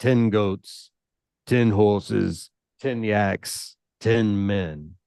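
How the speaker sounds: curt, lifeless, flat, terse monotone delivery. Storyteller voicing a character who is not eloquent: dull, terse voice. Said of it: "imagine he's pretty dull. ... very terse".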